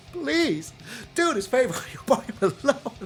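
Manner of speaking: playful put-on pleading. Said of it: "I know I sound like I'm begging".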